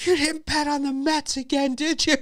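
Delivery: very high, shrill yell. Retelling his wife yelling from the other room, imitating wife yelling. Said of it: "My wife's in the other room yelling".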